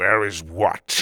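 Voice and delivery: through clenched teeth. Reading a story aloud, the character Tuga answers: said through gritted teeth. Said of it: "Tuga said through gritted teeth".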